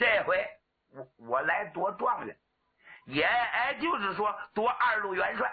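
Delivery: put-on stammering with repeated syllables, young warrior voice. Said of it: "人送外号小磕，磕巴嘴儿".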